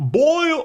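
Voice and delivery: weird high shout. Repeating the weird noise Goofy makes during attacks: weird Goofy attack noise. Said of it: "he makes some kind of weird".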